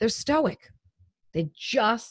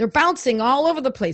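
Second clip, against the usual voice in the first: plain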